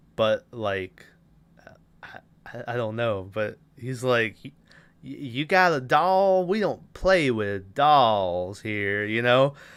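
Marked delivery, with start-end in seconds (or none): 5.0-9.5 put-on Southern gentleman accent, slower. Speaker quoting a man who takes away a doll: southern gentleman voice. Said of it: "kind of a southern gentleman".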